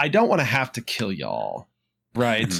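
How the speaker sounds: mock nonchalant, breezy, sing-song, courteous menace. Retelling how a devil shows up to collect a soul: imitating a nonchalant, polite devil. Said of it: "he's completely nonchalant".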